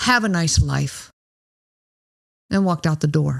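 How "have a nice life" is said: very menacing, threatening tone. Retelling how a man got in a woman's face, saying it menacingly. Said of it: "said in a very menacing voice".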